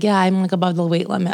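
plain

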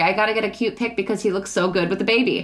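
ordinary talk

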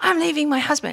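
put-on abrupt, high, sudden yelled outburst. An orthodontist retelling a patient's parent yelling out at the practice, retelling a yell. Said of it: "she yells out".

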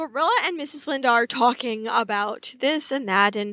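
ordinary delivery

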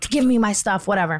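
plain

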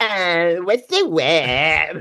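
creaky fried voice, stretching the word out. Describing how other girls talk, imitating them: mocking vocal fry. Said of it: "other girls come in with vocal fry".

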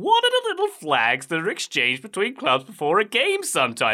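bad comedian voice, high with swinging pitch. Reading a listener's question aloud in a Seinfeld voice. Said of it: "In my best Seinfeld voice".

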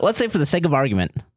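high cartoony caricature voice. Asked by the other speaker to do an impression: Ben Shapiro impression. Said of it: "Ben Shapiro right now".

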